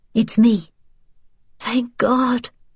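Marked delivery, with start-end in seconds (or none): 1.6-2.5 whispery voice, much higher pitch. A character answers from the darkness of a cellar: whispery voice. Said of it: "came a whispery voice from the darkness".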